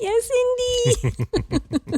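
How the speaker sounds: very high, slow, choked-up echo, drawn out, near tears. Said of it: "Getting choked up".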